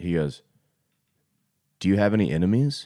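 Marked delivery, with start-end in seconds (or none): 1.8-2.9 mock dramatic delivery. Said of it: "very dramatic".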